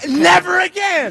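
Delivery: very high, shrill, loud all-out yelling. Learning they have already won the belt, yelling. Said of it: "Why are you still yelling?".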